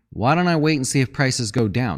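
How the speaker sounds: usual speaking voice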